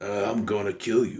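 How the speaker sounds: slow, drawn-out, worn raspy voice, sounding indifferent. Complaining about how an actor sounds now, doing a Bruce Willis impression. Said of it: "he kind of sounds like this".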